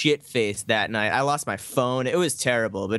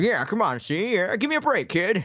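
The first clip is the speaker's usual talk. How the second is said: put-on old-time thirties gangster voice, pitched up high; 9 semitones higher than usual. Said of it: "he talks like an old mobster from, like, the thirties".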